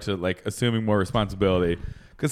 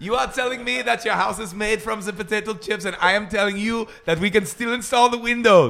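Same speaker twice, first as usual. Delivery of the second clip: high-pitched, irate German accent; 11 semitones higher than usual. Performer acting out a scene, in an angry German accent. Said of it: "you're just angry German".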